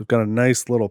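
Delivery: ordinary delivery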